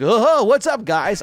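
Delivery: loud, drawn-out, big, breezy, laid-back cool-dude voice. Hoping the movie's Link won't sound like this: Sonic-style casual dude voice. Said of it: "I just don't want him to sound like Sonic or something where he's like".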